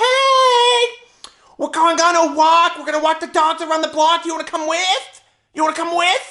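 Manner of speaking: put-on loud shouting. Retelling how your mom called up from downstairs; imitating mom shouting. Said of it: "and my mom comes up to the banister because she's downstairs and she shouts".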